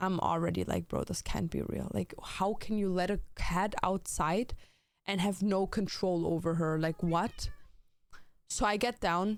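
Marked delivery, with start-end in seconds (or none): none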